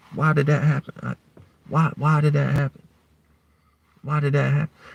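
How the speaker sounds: quiet sarcastic joking. Pretending not to understand what just happened, quiet, joking and sarcastic. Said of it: "Notice how I started speaking more quieter. Started saying it more jokingly. Started adding some sarcasm to it".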